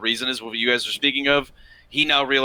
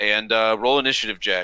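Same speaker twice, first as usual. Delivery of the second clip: ordinary delivery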